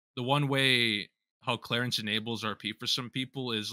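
ordinary talk

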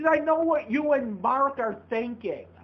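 angry yelling. Answering someone who asked why they are yelling, yelling. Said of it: "Why are you yelling at me?".

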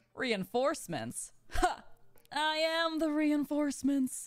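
slow, unhurried, deliberate, drawn-out declaration. Asked to do it again, speaker repeats the impression: impression of Dingyuan. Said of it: "impression of um, Dingyuan; it sounds just like you".

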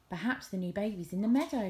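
plain reading voice

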